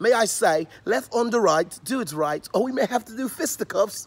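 amateurish put-on British accent. Refusing to play a school, spoken in a put-on british accent.

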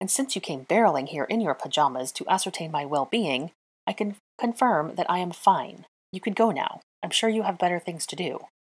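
ordinary delivery

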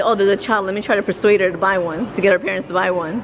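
ordinary talk

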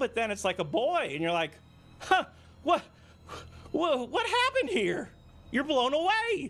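rising pitch. Explaining a surprising twist to the others, voice getting higher. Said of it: "your voice is getting higher again".

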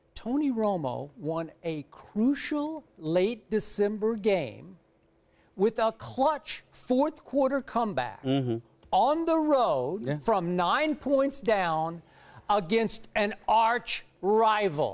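very slow, deliberate, word-by-word, drawn out. Restating a point to the others, speaking very slowly. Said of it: "I'm going to say this very slowly".

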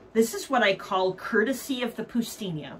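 usual speaking voice

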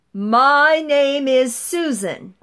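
big, full, loud voice, very drawn out. Instructor demonstrating a voice exercise to a group, nice and loud. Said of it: "It's going to be nice and loud".

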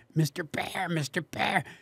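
soft, slow cartoon voice. Recalling practicing a voice heard on tv, imitating that voice from tv. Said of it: "learn to do that voice".

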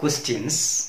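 ordinary delivery

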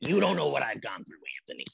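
put-on little, creaky, swooping old-grandma voice. The speaker voices the little one Willow the way she imagines her talking. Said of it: "That's my voice for her".

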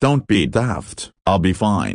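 usual speaking voice

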